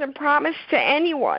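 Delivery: choked-up, catching voice, very high and swooping. Speaking to Jerry, choked up. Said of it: "I guess I'm choking up so much".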